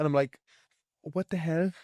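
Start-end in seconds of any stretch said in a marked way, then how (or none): 1.0-1.7 bad fake Irish accent, pitched up. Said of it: "That was awful".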